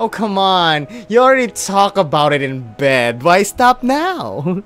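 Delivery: ordinary delivery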